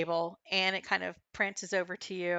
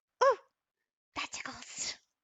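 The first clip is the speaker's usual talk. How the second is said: small put-on voice, much higher pitch; 5 semitones higher, 4 dB quieter than usual. Imagining the animal's reply to being scratched under the chin, in a little voice. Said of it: "this like little voice in your head".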